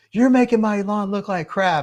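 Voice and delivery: shrill, high-pitched, angry shout. Speaker acts out a guy who drives by insulting him: retelling a neighbor's yell. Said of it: "and he just yells".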